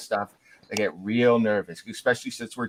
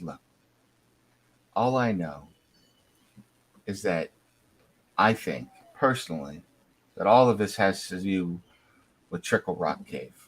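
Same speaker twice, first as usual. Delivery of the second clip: voice lowered and dropped to a hush; 3 semitones lower than usual. A woman looks side to side, sighs, then speaks, lowered voice. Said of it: "kind of lowers her voice".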